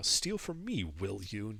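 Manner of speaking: hushed mutter under the breath, half to oneself. As the players walk out, she mutters after them: muttering under her breath. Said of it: "you just hear her muttering".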